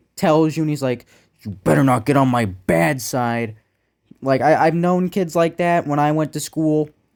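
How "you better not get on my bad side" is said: put-on angry menacing tone. Speaker recalling a schoolkid who threatens others when angry, imitating an angry threat. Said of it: "when he gets angry".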